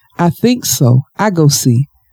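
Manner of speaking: usual speaking voice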